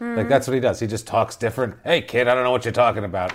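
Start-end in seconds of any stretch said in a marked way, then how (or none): 1.8-3.3 fake rough, gravelly voice. Describing an actor's vocal range, doing his gravelly older-man voice. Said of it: "based on how gravelly he makes his".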